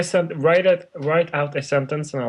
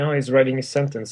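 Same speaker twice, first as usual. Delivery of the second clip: ordinary delivery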